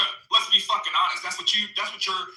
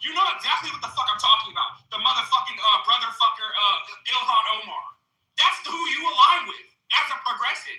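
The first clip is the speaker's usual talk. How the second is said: worked-up, heated, swearing, profane outburst; 4 semitones higher than usual. In an argument with another speaker, yelling at him. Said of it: "Why are you yelling at me?".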